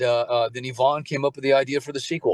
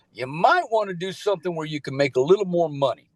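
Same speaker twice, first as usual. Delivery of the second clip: put-on drawling Southern accent, pitched up; 5 semitones higher than usual. Retelling what the Navy dad asked: imitating a Southern dad. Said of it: "he talks like this, he's a Southern guy".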